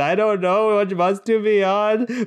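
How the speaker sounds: high, loud crying and wailing plea. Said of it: "I started crying and wailing".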